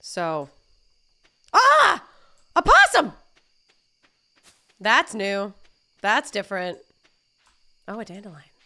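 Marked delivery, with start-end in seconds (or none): 1.5-3.1 sudden startled scream, very high and very loud. Playing a farming game, startled by a possum: startled screaming. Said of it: "Sorry for all the screaming".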